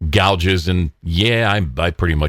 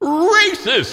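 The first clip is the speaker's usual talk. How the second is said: high-pitched mock scream, shrieked. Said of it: "point at the Republicans and scream".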